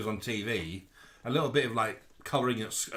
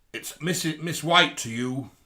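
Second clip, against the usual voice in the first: mock very stern, loud tone; 4 semitones higher, 6 dB louder than usual. Retelling a sharp answer from behind the door: imitating a very stern reply. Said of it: "a very stern".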